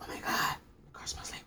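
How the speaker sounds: quiet whisper. Retelling friends in a car whispering in the speaker's ear: imitating a friend's whisper. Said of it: "whispering in my ear".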